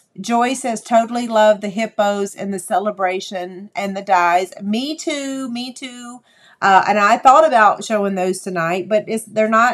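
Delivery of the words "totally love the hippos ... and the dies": usual speaking voice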